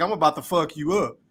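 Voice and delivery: put-on voice, laughing while talking. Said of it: "like he laughed".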